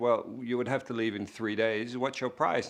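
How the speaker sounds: put-on broken-English Chinese accent. Retelling a phone call from a caller about a movie: imitating broken-english chinese accent. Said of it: "this broken English, Chinese voice saying".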